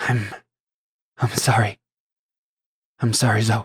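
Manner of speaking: words spoken through tearful weeping. Hearing her husband fighting in the distance, a woman apologizes to Zoe; crying while speaking. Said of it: "she is like crying and uh".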